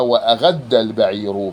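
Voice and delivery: normal talking voice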